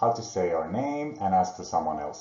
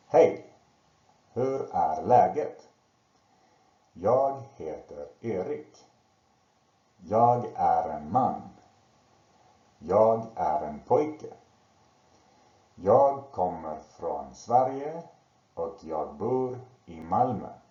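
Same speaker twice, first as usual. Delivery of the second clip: deliberate, distinct, slow pronunciation. Reading a swedish text aloud so learners hear all the sounds: slow, clearly articulated. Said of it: "read it slowly and articulate really well".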